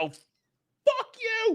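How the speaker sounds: very high, swooping yelled outburst. Recounting a spoiled moment, the speaker re-enacts yelling at the screen: retelling a yell. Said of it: "I yelled at my".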